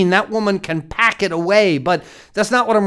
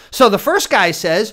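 ordinary talk

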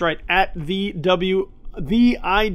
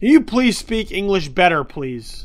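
normal talking voice

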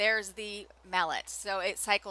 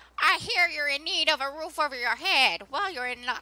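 put-on older lady character voice; 7 semitones higher than usual. Reading a game character's dialogue aloud to viewers, Minnie older-lady voice. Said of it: "I don't know why I'm using that voice".

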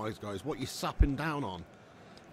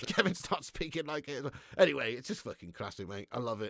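ordinary talk, nothing marked

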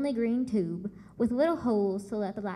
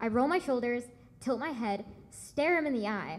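ordinary delivery

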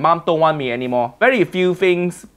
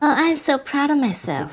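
mocking put-on voice, higher pitch; 10 semitones higher, 3 dB quieter than usual. Mocking the cook who said she was proud of herself: mocking imitation of the cook. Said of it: "Why this woman proud of herself?".

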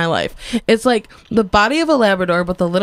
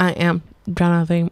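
robotic voice, lower pitch; 3 semitones lower than usual. Asked to do his robot voice, the speaker talks in a robot voice. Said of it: "hear your robot voice".

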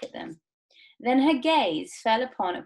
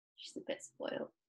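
plain

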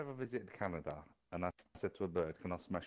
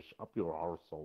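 put-on Irish accent. Repeating a phrase another speaker said: irish accent. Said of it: "Sounds Irish".

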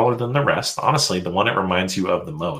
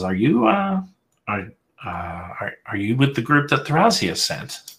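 aged fairy wizard voice, halting, stumbling words; 4 semitones higher than usual. Voicing the old Whitefire Arcanist greeting a small visitor: old fairy arcanist voice. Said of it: "hobbles across to you and says".

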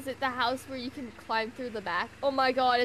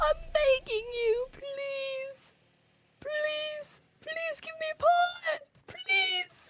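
high, slow, crying plea as if dying. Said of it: "You sound like you're dying".

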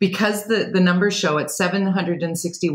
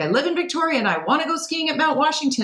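high, fast mock whiner voice. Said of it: "There's a guy that's like".

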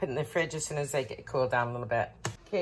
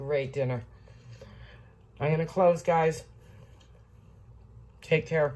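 speaking while chewing, mouth full; 4 dB quieter than usual. Signing off a video to viewers, talking while eating. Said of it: "Sorry, I'm eating".

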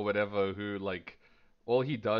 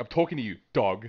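loud, insulting, put-down tone; 6 dB louder than usual. Showing another speaker how to say the word as an insult. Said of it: "you gotta say it like an insult".

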